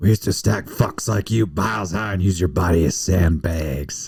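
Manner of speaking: put-on old war veteran voice, grim and hard, menacing. Quoting a line from the movie Gran Torino: good Eastwood impression. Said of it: "That was a good Eastwood impression".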